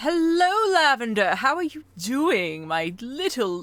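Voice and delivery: dramatic witch character voice. Greeting Lavender while doing an Ursula voice, in an Ursula sea witch voice. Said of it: "I'm doing my Ursula C voice".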